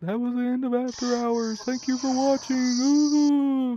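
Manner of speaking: very high, slow, drawn-out, spooky ghost voice. Imagining signing off After Hours as a ghost, in a ghostly voice. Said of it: "Maybe like a ghostly voice stuff".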